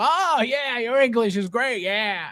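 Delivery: derisive, sneering mock of an eager voice. Imitating the virgins who praise a presenter: imitating the virgins. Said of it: "you got the virgins going".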